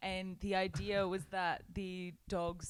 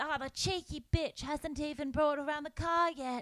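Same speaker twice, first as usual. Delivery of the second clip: put-on sweet, cute old lady voice, pitched higher; 8 semitones higher than usual. Retelling a grandma's reply when offered a biscuit, cute old lady voice. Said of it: "this really cute old lady".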